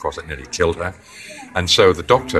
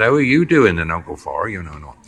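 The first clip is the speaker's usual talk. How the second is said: put-on country accent. Speaker recalls being a country boy, imitating how farmers back home talk. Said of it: "they talk like that".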